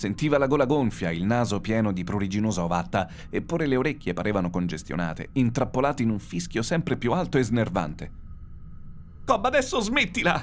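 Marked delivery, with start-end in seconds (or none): 9.2-10.4 shrill, high, terrified, scared yell. Ziggy, alone in the empty, silent spaceship, calls out to Cobb; shouted. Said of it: "urlò Ziggy nell'astronave vuota e silente".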